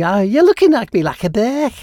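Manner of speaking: put-on Liverpool-style accent. Quoting an outtake from a studio blooper tape, in a Liverpool accent. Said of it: "saying Burke in a Liverpool kind of accent".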